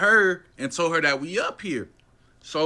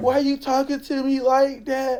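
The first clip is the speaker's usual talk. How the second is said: put-on tearful pleading voice, higher; 8 semitones higher than usual. Retelling what she said while crying: imitating someone crying. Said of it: "So she started crying again".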